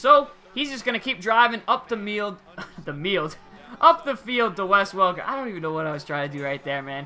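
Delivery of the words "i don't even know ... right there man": fast, rattled-off, excited talk. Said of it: "I'm just talking too fast right now".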